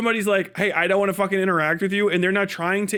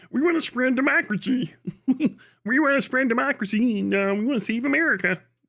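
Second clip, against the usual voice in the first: mocking put-on puppet voice; 4 semitones higher than usual. Mocking people who claim they want to spread democracy; Muppet voice. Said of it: "It's got fucking Muppet voice".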